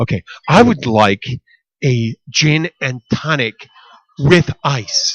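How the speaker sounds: upbeat, emphatic, every word carefully enunciated. Imitating how she orders a drink, emphatic, enunciated order. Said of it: "very descriptive and very emphatic".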